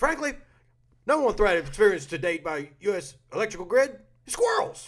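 loud, very high, made-up official voice. Quoting a former NSA deputy director on grid threats: John Inglis impression. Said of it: "my very best John Inglis impression".

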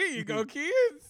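cheery, slow, loud voice.

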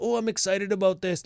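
put-on, sarcastic, mocking, mimicking eager enthusiasm. Mocking players who were excited about the card: imitating excited players. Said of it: "Look, I sound like you".

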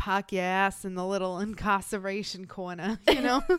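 put-on deliberate Boston accent. Joking about an evil guy, a line in a put-on boston accent. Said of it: "I feel like my Boston accent is getting better and worse at the same time".

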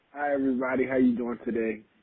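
drained, unenthusiastic, low-energy delivery. A podcast guest greets the listeners when the host asks him to, unexcited. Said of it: "You don't even sound excited like me".

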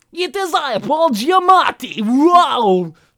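bad Russian accent, loud, booming and slow. Imitating an actor's Russian accent as the Rhino: Paul Giamatti's bad Russian accent. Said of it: "his Russian is this".

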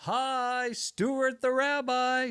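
very high, very slow, stretched out. A rabbi greets a family at the door, done as a Rabbi Stuart Federow impression. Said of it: "I'll do my Federow impression for you".

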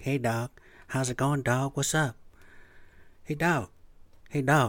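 distinctive laid-back, relaxed voice. Imitating a former coworker's greeting: imitating a coworker's voice. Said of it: "this guy had this voice like".

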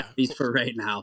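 plain

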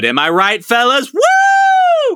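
loud, high mock bro cheer whoop.

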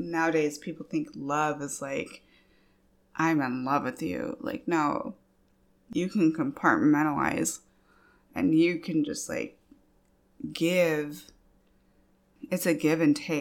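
on the verge of crying, choking up. Sharing her feelings in conversation, about to cry. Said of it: "I'm sorry. I'm gonna cry".

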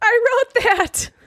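very high, thrilled, excited outburst. Retelling a critic standing up in a screening room: imitating an excited Roger Ebert. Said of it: "he was all excited".

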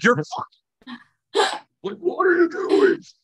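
very high, slow, drawn-out exasperated furious yell. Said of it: "I'm like".

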